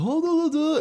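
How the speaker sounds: very high caricature put-on voice.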